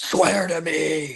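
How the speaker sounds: growled superhero voice. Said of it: "trying to do his Batman voice".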